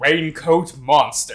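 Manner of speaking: loud, dramatic fighting-game announcer call. Naming Raincoat Monster like a fighting game selection screen, fighting-game announcer voice. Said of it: "It's to be like the selection screen in a fighting game".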